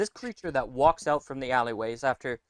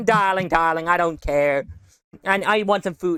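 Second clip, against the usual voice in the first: put-on uncaring voice, louder; 4 semitones higher, 6 dB louder than usual. Describing a carefree aunt to friends, doing an Edna Mode voice. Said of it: "aunt that just does not care and is like".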